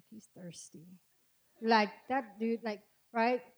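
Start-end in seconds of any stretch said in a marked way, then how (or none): 0.1-0.9 muttered under breath, lower and quieter. Acting out a girl reacting to a guy asking for her digits: muttering under her breath. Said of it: "under her breath".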